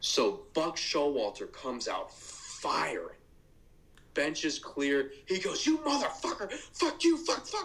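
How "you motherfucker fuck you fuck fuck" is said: play-acted, very high-pitched, furious screeching scream. Act out Buck Showalter coming out firing at the bench, imitating Buck Showalter screaming. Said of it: "He's screaming".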